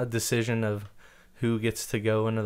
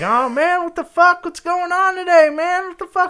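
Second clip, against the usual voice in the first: very loud, very high, shrill, rowdy ranting; 12 dB louder than usual. Retelling what a coworker said in the bathroom: imitating a loud, boisterous coworker. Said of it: "really loud and boisterous".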